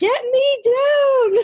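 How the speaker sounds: mock very high shrill yell, "down" stretched out. Retelling a line from the Santa Claus movie: imitating someone yelling. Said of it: "I love how he's yelling".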